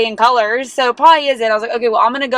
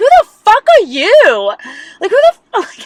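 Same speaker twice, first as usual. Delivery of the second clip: mock very high, loud yelling; 10 semitones higher, 5 dB louder than usual. Retelling a clash with a valet employee, imitating own yelling. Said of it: "I literally yelled that back at him".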